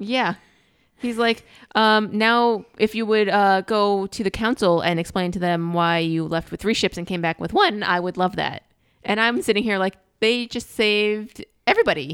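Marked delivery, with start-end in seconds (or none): none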